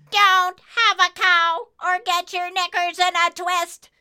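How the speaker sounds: flat, high-pitched monotone delivery. A strange figure answers a cloud's worried questions in a high-pitched monotone. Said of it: "she voiced in a high-pitched monotone".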